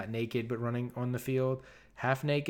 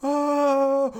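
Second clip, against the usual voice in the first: high crowd oohing. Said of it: "the crowd's like".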